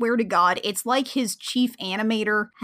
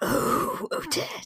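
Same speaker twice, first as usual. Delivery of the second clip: soft, breathy, whispered romantic voice; 3 semitones higher, 4 dB quieter than usual. Imitating Rothbart as he comes to impress Odette: Rothbart's voice. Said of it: "the voice he uses".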